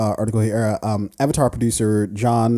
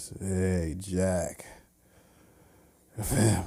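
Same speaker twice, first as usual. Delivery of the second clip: very slow, soft delivery, drawn out word by word; 3 semitones lower, 11 dB quieter than usual. Retelling a movie clip where a man talks to his son, imitating very slow speech. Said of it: "just very slowly says".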